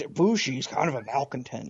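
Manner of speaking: gruff, growly monster voice. Trying out a voice for a character with a co-host, Cookie Monster voice. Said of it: "that was even more cookie monster".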